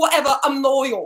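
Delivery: put-on high British reality-TV style accent. Retelling their reaction to watching Celebs Go Dating, the speaker does a British accent. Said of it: "get a solid like British accent down".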